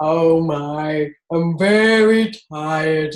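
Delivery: very slow, drawn-out, goofy character voice. Describing playing goofy with the kids, doing the Ratty voice. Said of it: "And they know that's Ratty".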